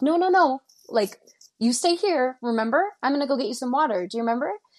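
high, insistent, gentle but firm coaxing. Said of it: "And I'm like".

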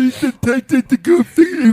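very high, loud, mock squeaky voice.

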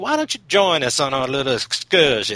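pointed, falsely polite, passive-aggressive voice. Retelling how a man greets his girlfriend's lover, mock passive-aggressive invite. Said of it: "I don't know why I keep slipping into voices".

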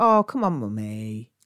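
slow, dry, ironic mocking tone. Showing how they sometimes say Mummy: ironic, mocking tone. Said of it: "I sometimes say it with irony, like I'll go".

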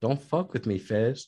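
mocking, put-on kind lady voice.

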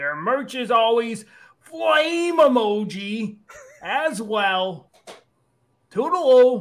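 high goblin voice, "emoji" drawn out. Reading a listener's review aloud in a funny voice: Bleck the Lesser goblin voice. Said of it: "my goblin character named Bleck the Lesser".

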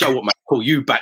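ordinary talk

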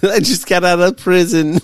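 speaking through laughter. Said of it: "I'm sorry y'all gotta hear my horrible laugh".

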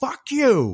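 mock yelling. Retelling a movie scene where she curses at someone: imitating someone yelling.

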